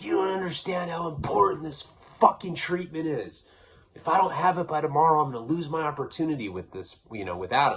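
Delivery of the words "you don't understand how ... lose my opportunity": put-on heated yelling, high-pitched. Retelling a fight where both were yelling: imitating own past yelling. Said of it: "yelling at each other".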